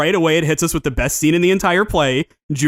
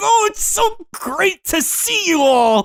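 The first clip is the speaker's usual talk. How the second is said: very high, drawn-out, squeaky, phony goofy gush. Describing a goofy cartoon villain faking joy: imitating Junior, goofy villain. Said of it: "he's just like".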